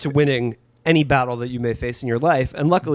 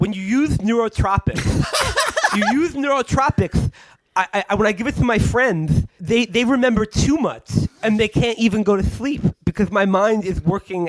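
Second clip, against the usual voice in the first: high, spluttery cartoon cat voice; 8 semitones higher than usual. Showing what the man really sounds like: imitating Mike Cernovich, Sylvester the Cat voice. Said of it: "He sounds like fucking Sylvester the Cat".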